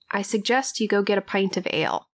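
softly whispered, hushed. In a tabletop game, a player's character casts suggestion on a guard, whispering. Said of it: "and just whisper".

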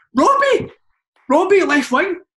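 excited, high-pitched calling.

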